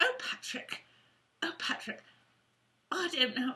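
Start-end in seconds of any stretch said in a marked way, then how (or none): 0.0-2.0 whispered, bad fake Irish lilt. Imitating a character from Call the Midwife: bad Irish accent. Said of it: "I have to do her Irish accent".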